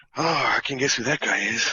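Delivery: whispered, in a character voice. Playing a character who quietly tells a companion he recognizes someone: whispering in character. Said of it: "I whisper to him".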